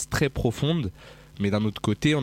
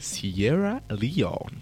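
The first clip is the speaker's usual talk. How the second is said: put-on English accent; 2 semitones higher than usual. Announcing the title of the track just played, in an English accent. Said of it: "je voulais le dire bien avec un accent anglais".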